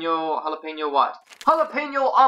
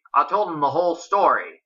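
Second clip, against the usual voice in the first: plain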